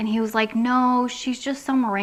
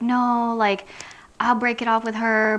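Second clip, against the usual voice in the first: mock upset, crying, pleading voice. Retelling a breakup, quoting the partner's reply, imitating him crying, pleading. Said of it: "he starts crying, he's upset".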